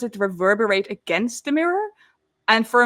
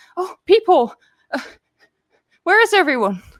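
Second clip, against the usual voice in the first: put-on frightened, flustered young woman voice, panicked, pitched up; 7 semitones higher, 3 dB louder than usual. Voicing a scraped-up dwarf who runs up to Willow: panicked young dwarf woman. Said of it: "she looks a bit, like, panicked".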